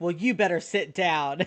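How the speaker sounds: put-on theatrical delivery. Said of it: "Rachel is the most theatrical".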